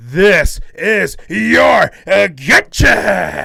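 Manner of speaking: slow, rough, loud screaming. Retelling a line someone screamed in his best Vince McMahon impression. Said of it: "He did his best Vince McMahon impression".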